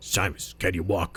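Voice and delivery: low, rough, gruff, grizzled character voice. Voicing the chief asking Simus whether he can walk, in a gruff, grizzled voice. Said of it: "he's got that gruff, grizzled voice".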